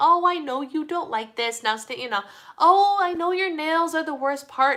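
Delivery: play-acted high, sweet-talking baby talk. Retelling a neighbor grooming her little dog: imitating neighbor talking sweetly. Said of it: "I heard her just talking sweet".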